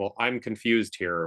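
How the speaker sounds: normal talking voice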